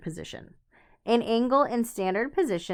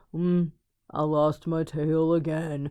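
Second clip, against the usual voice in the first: bad, gloomy donkey voice, low, slow, drawn out; 4 semitones lower than usual. Speaker describing negative, down people: terrible Eeyore impression. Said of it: "terrible impression".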